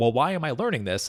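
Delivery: ordinary delivery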